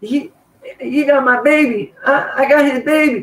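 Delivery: very high, crazed, frantic woman's outburst. Speaker retelling tackling a woman who claimed he had her baby, imitating her. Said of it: "She she's like".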